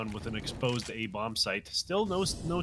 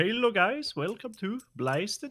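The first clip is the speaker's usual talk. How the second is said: put-on, attempted Dutch accent, very high-pitched; 10 semitones higher, 3 dB louder than usual. Introducing a made-up reality show called blasted, in an attempted dutch accent. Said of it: "attempt at a Dutch accent".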